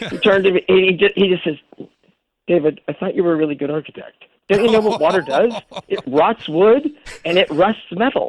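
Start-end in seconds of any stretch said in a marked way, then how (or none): none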